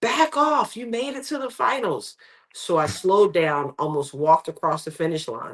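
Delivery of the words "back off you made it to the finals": mock, very high-pitched shouted coach's yell. Retelling a coach's call during a race: imitating a coach yelling. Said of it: "my coach was yelling".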